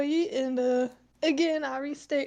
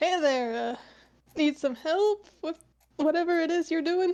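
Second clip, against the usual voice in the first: raised, carrying voice, speaking up. A man who was muttering to himself walks over to offer help, speaking up. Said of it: "speaks up".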